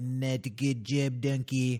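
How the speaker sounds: put-on Scottish ogre voice. Pitching a comedy bit scolding the dog, in Shrek voice. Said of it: "you do the voice".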